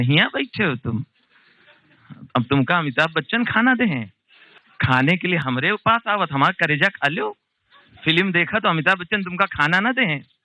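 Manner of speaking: sharp, scolding telling-off voice. Retelling being caught skipping school at the cinema: imitating the mother. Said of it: "अम्मा पीछे से आके ढूंढ लेती थी".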